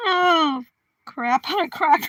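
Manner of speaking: words squeezed out through laughter, very slow. Reacting to something funny, laughing while talking. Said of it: "I can't stop laughing".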